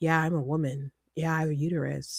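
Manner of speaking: flat monotone voice. Retelling what a guy said when others called him a woman, in a monotone. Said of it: "the voice of a guy saying a very monotone".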